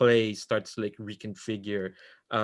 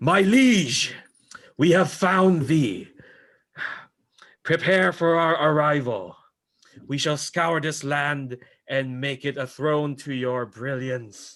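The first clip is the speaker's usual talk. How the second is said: loud, high war shout, many voices in unison; 5 semitones higher, 7 dB louder than usual. Narrator voicing a hundred warriors calling to their liege, as a massed warrior shout. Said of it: "the shout of 100 warriors going".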